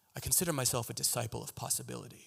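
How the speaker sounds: rough, creaky put-on hero voice. Retelling own line said on a podcast: Batman voice. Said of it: "I said it in that voice, that kind of, like, Batman voice".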